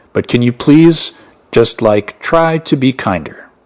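normal talking voice

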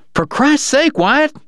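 very high, cried-out exclamation. Dog, as Morgan moves to take Mr. Wright in, crying out to Wyatt. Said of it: "Dog cried".

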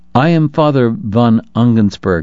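usual speaking voice

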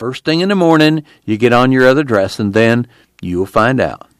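plain reading voice

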